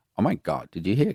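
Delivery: put-on gossipy voice. Acting out a gossiping friend, thrilled put-on gossipy voice. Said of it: "Stop putting that voice on".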